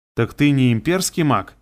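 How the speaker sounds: plain reading voice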